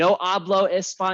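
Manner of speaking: put-on American accent. Mocking how Americans speak a foreign language, bad American-accent Spanish. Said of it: "a really American accent tries to speak like a foreign language".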